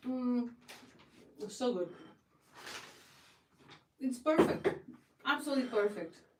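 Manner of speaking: speaking while eating, mouth full. Tasting the breads just baked, talking with mouth full. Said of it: "I'm talking with my mouth full".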